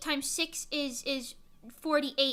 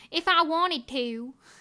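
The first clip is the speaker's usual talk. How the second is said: loud, slow, drawn-out Southern drawl; 5 dB louder than usual. Imitating how Applejack from My Little Pony talks: Applejack Southern accent. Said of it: "I do talk like that ironically sometimes".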